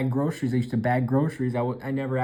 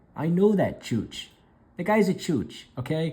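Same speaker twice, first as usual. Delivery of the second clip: pitched-up New Jersey wiseguy mobster accent; 5 semitones higher than usual. Talking about Mike Kikukawa loving kabuki theater, slip into a Tony Soprano voice. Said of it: "I sound like Tony Soprano".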